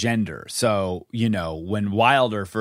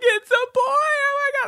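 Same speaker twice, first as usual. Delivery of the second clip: very high, freaked-out squeal. Recalling the moment a baby boy was born, retelling a very high voice. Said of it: "My voice goes like 8 octaves high".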